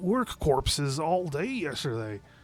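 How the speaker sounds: gruff, high, put-on orc voice.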